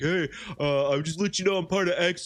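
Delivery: leading, baiting tone. Retelling how a guy tried to bait them: imitating a baiting stranger. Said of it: "Some guy who's like".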